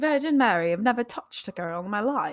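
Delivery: spoken in a royal, regal manner. Joking about past relationships, Queen of England voice. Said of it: "Why you sound like the Queen of England?".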